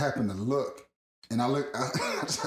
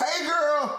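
play-acted, loud, shrill, very high yell; 4 dB louder than usual. Re-enacting calling out to her as she got off the plane, retelling a yell. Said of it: "was I that loud?".

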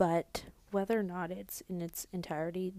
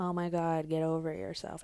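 flat, deadpan delivery, louder; 3 dB louder than usual. Quoting something Kourtney is known to say, in Kourtney's flat monotone. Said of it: "It's the monotone".

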